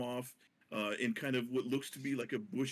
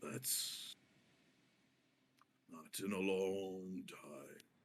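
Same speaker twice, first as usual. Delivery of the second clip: very low rumbling creature voice, lower, quieter; 5 semitones lower, 6 dB quieter than usual. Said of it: "it talks in a very low, rumbling kind of voice".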